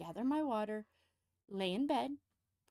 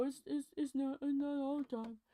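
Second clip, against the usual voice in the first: teasing, mocking delivery with stumbling over the words; 3 semitones higher than usual. Retelling how her partner protests, doing an impression of him. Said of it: "that's my impression of him".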